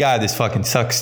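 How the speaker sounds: ordinary talk, nothing marked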